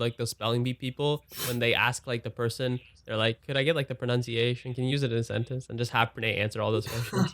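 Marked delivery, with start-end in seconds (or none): none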